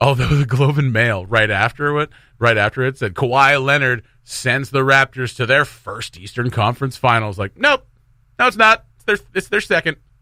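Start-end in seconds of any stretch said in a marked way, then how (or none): none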